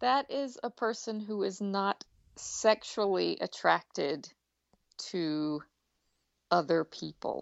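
very slow, deliberate, careful wording. Asked what asexual means to them, speaking very slowly. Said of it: "you spoke that very slowly".

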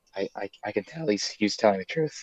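whispering. A player's character speaks to Pierre and the party, whispering. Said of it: "I'll whisper that to the party".

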